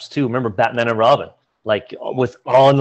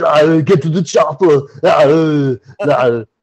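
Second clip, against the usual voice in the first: slow, drawn-out, cheesy action-movie one-liner delivery; 3 semitones higher, 4 dB louder than usual. Asked to do an Arnold impression: Arnold Schwarzenegger impression. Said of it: "so he'd be like".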